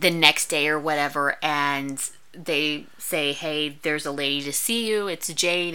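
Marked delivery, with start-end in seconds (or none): none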